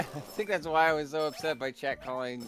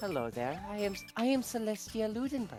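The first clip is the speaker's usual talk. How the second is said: sinister vaguely European character voice, higher pitched; 7 semitones higher, 4 dB quieter than usual. Showing how a Danganronpa character was voiced: sinister, vaguely European Celestia voice. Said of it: "a very sinister, vaguely European, like, character".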